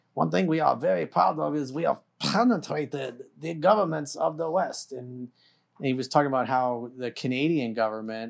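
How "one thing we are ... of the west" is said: put-on boastful tone with a German accent. Quoting a bragging remark about penetrating Western governments: imitating Klaus Schwab's German accent. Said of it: "bragging in his German accent".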